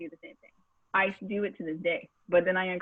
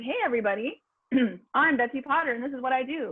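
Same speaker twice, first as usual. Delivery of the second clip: exciting, energetic TV show-host introduction voice; 6 semitones higher than usual. Showing how a name introduction should sound: exciting TV intro voice. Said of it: "Isn't it exciting?".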